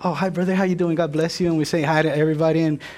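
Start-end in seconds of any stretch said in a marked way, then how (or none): 0.0-1.5 fake, put-on pious churchgoer friendliness. Acting out churchgoers who put on a holy mask: mock holy churchgoer greeting. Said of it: "put my little holy mask on".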